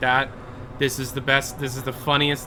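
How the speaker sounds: ordinary delivery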